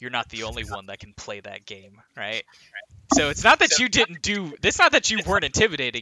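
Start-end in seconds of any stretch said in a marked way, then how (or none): 0.0-2.4 voice dropped a little, soft. Retelling how a man answered a flustered rival, in a dropped voice. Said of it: "he drops his voice a little bit".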